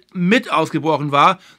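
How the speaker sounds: emphatic "mit" stressed with a rising end. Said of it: "Ich betone ganz gezielt".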